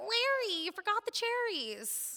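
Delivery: put-on very high two-year-old hollering. Retelling calling down a bar to the bartender as a two-year-old, hollering in a toddler voice. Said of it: "in my two-year-old voice, hollered".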